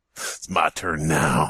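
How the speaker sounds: low, very slow Southern drawl. Telling a covert spy story, the speaker voices the Xbox One in Southern accent. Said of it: "Why is the Xbox One Southern?".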